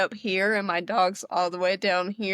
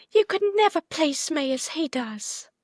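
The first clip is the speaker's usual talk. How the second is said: botched put-on British accent, higher; 8 semitones higher than usual. Quoting something Ellen says in a British accent: botched Ellen impression, British accent. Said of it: "I feel like I botched the hell out of that".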